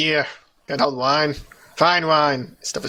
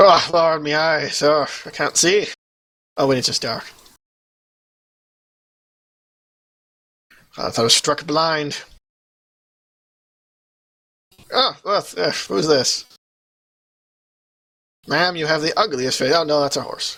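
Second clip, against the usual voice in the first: put-on drunk, intoxicated-sounding speech. Playing a character in a scene, drunk speech. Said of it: "how drunk is he?".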